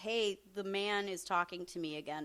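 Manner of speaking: plain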